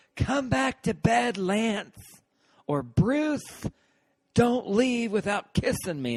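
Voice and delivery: shrill, very high, camp effeminate scream. Yelling out the window at a guy passing by, put-on effeminate voice screamed loud. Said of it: "I'd do an effeminate voice and scream it real loud".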